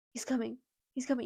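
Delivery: acted, frightened, panicked, weeping voice. Retelling a scary night, imitating someone panicked and weeping. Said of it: "And she starts weeping".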